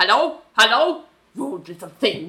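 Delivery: put-on radio-host voice with a German accent. Retelling a radio host after a caller hangs up: Doctor Ruth voice. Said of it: "Doctor Ruth is German".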